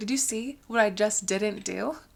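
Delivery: ordinary talk, nothing marked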